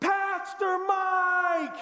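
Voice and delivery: mock very high, loud yell, name drawn out. Telling how a woman from his old church called to him in a gym lobby: retelling a scream. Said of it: "somebody screams".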